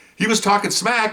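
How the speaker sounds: high-pitched, mock-reassuring teasing tone. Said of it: "And we're all going".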